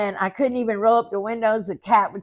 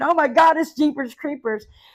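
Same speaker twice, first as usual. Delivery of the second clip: put-on screaming, higher; 6 semitones higher, 3 dB louder than usual. Retelling seeing a hawk carry off the dog: retelling a scream. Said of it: "I started screaming".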